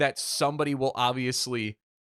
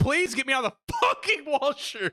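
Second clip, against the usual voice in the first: shrill, very high scream of agony; 12 semitones higher than usual. Retelling a knee injury as mom and stepdad come in; retelling a pained scream. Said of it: "I'm screaming and in so much pain".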